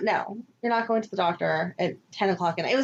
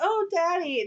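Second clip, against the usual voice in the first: high childlike put-on little kid voice; 8 semitones higher than usual. Recounting what she said to him, in a little kid voice. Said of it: "she said it in that little kid voice too, like".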